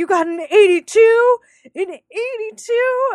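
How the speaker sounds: very high, shrill, loud, drawn-out yelling. Retelling a scene where Calvin's dad yells at him: imitating someone yelling. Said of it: "yelling at him. He's like".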